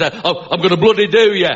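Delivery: put-on threatening Northern English accent. Demonstrating which accents work for sounding aggressive, Northern accent. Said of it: "or like Northern accents".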